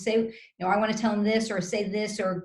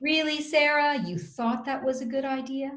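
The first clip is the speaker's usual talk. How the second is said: high, dripping sarcastic disbelief; 5 semitones higher than usual. Showing how partners react in the moment: imitating a sarcastic remark. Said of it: "we're likely to be sarcastic".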